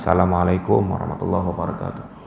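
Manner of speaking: hushed, soft, gentle, mild voice. Describing a night greeting that would not wake sleepers: soft, quiet greeting. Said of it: "Malam-malam biasa aja, ... Enggak kenceng sampai sampai orang tidur bangun".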